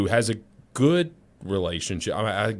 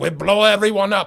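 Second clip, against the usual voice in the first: awful put-on Iranian accent, very high, loud; 11 semitones higher, 7 dB louder than usual. Mimicking how Iranians supposedly talk, in a bad Iranian accent. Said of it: "that's a terrible accent".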